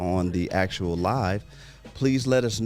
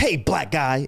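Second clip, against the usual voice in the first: mock blunt, hard, pitched-up street-style callout; 6 semitones higher than usual. Acting out a guy calling out on the street: imitating a hard callout. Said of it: "did he say it, like, hard like that".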